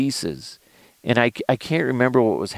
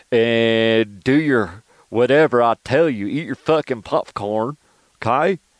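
slow, drawled, stretched, put-on hillbilly accent. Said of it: "I'm a hillbilly all of a sudden".

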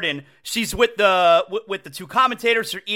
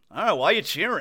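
plain

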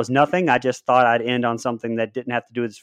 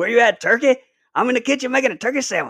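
very high, faint stand-up comedian-style voice; 11 semitones higher than usual. Quoting a movie line he laughed at: a little Chris Rock voice. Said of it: "I had a little Chris Rock going on in my voice there".

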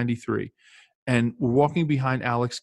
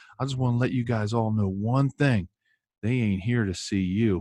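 put-on North Carolina accent, done as best possible. Retelling what a man told him and the other boys, in a North Carolina accent. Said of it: "North Carolina accent".

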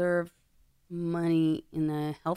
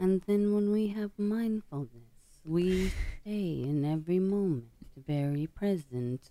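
really slow, unhurried, soothing, lulling voice. Showing a listener the voice that helps you sleep, do the slow, soothing Full Catastrophe Living voice. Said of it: "he's got a really slow, like, and soothing voice".

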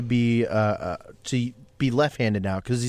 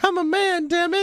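very high, strained put-on voice. Saying a line the other speaker asks for: Chrisley voice. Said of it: "That's what Chrisley would say".

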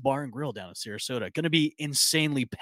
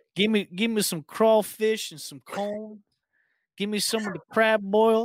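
bad put-on New Orleans accent, pitched up; 7 semitones higher than usual. Talking with others about crab boil for Mardi Gras, in a bad New Orleans accent. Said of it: "That's my worst New Orleans accent".

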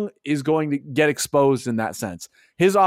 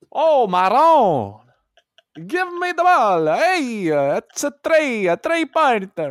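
put-on Italian accent, sometimes pitched higher; 8 semitones higher, 3 dB louder than usual. Imitating how a player talks: Danilo Gallinari impression. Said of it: "he talks like that".

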